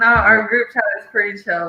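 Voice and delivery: normal talking voice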